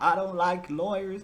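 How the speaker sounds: mock Southern American accent. Discussing a police interview video, the speaker quotes the man in it: Dusty McFetridge Southern accent. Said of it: "He's the real Southern one".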